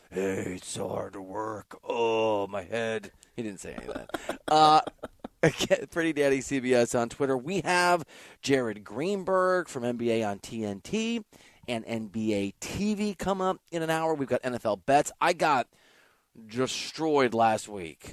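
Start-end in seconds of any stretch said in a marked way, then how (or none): 0.1-3.1 mock deep New York voice, low, soft, slow. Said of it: "that deep New York voice going today".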